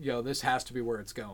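plain

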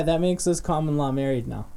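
normal talking voice

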